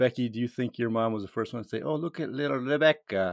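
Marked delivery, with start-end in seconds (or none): 1.8-3.3 put-on Eastern European accent, put on. Imagining what the listener's mom first said, in an eastern european accent. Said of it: "she doesn't have an Eastern European accent".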